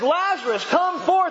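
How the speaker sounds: loud booming call. Preaching on Lazarus, acting out the call from outside, Jesus calling in a booming voice. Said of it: "calls out in a booming voice".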